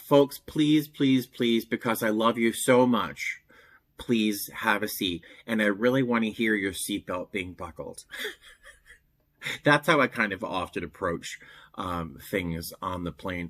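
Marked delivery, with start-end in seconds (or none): 0.0-8.0 mock pleading public-address announcer voice. Retelling an announcement over the plane's pa to standing passengers, imitating a pleading announcement. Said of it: "I just grab the P A real quick and go".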